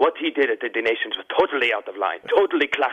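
put-on speaking with an Italian accent. Retelling what a man told the speaker; imitating Mario Marini's accent. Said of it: "I like the and accent".

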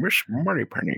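put-on Scottish film star voice. Describing how the other's voice sounded: Sean Connery voice. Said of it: "Sean Connery going".

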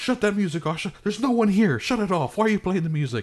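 very high, screaming yell. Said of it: "and then he yells".

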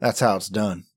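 very low, soft under-the-breath mumble. Playing a character who turns away and walks past Jay: mumbling. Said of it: "walking past Jay and mumbling".

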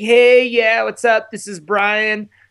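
full Southern California bro voice. Recording a voicemail greeting, Brian Deegan voice. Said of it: "I was really going for that Brian Deegan broed out Southern California voice".

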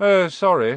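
loud, insincere tone, none of it meant. A boy answers Harry, who has said his parents are dead: insincere apology. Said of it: "not sounding sorry at all".

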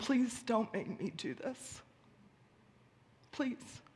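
broken, strained whisper. Retelling a prayer after news of a husband's death: retelling a choked whisper. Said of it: "I choked out whispers of".

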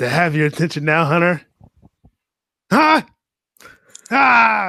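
slow, intense, high, deliberate wrestling-promo voice. Performing a promo line on request, intense Batista promo impression. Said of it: "let's hear a rendition of Batista's promo".

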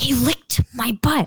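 whispered voice. Retelling what the guy whispered to you, whispering. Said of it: "And he whispers to me".

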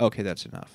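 sudden stern whisper, breathy, almost voiceless. Retelling a talent show moment when the noise got too loud: imitating a stern teacher. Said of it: "goes from happy to, like, stern".

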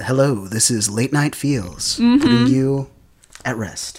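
nice, sensual, sultry late-night radio voice. Pitching a late-night show idea, voicing its host in a sultry voice. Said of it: "only like a nice just sultry voice".

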